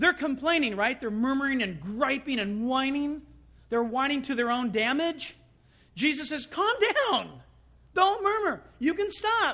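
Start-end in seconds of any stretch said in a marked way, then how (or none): 6.5-9.6 high-pitched with a sarcastic edge. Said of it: "It's a sarcasm".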